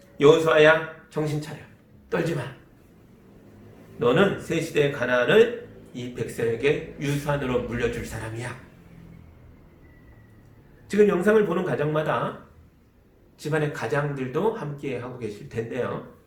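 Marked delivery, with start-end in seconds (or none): none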